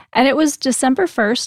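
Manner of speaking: usual speaking voice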